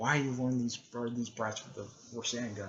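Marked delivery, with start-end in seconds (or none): none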